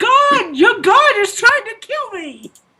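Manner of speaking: screaming at top of lungs. In a role-play scene, the speaker's character is screaming at the top of their lungs. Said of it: "screaming at the top of my lungs".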